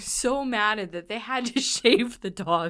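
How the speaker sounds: words broken up by laughter, laughing through them. Telling a story about the dog at the groomer, laughing while talking. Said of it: "I'm laughing because this thing".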